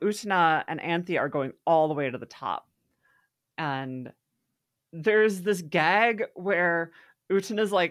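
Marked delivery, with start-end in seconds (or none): none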